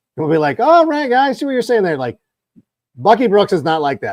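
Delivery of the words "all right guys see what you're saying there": high-pitched, very polite voice. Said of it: "Daniel Jeremiah is very polite".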